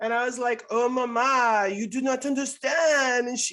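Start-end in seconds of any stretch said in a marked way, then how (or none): 0.7-3.3 loud, slow cartoon French accent, "mama" stretched out. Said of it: "spoke in a French accent".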